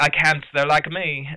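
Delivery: put-on, daft, stupid British accent. Quoting a film character's line about the dinosaurs: Maisie's stupid British accent. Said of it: "she has a stupid British accent".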